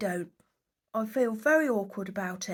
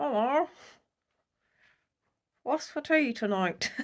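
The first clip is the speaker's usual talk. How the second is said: ventriloquist dummy puppet voice; 2 semitones higher than usual. Trying out another voice for a ventriloquist act, ventriloquist puppet voice. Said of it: "Do you think I'm a good ventriloquist?".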